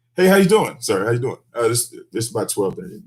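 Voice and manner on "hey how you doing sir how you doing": put-on calm, friendly police officer voice. Acting out a traffic stop as the cop, showing how it's done: acting as a calm cop. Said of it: "I'm the cop".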